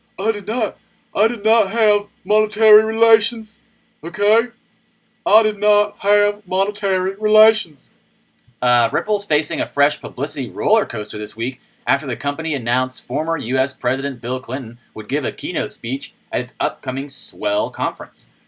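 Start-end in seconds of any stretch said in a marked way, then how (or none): 0.2-7.9 drawn out, loud and very high-pitched. Trying again after someone asked for a Bill Clinton voice. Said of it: "I can't do it very well".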